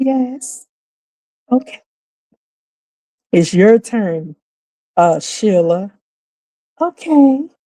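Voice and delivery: slow, silky, even-flowing moderator-style voice. Retelling how women on a panel were made to talk, very smooth voice. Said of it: "They had to talk in a very smooth voice".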